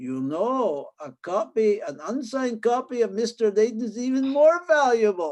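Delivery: put-on English spoken with a German accent. Retell what Mister Heinemann told you about an unsigned copy, in Mister Heinemann's English German accent. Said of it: "in this kind of English German accent".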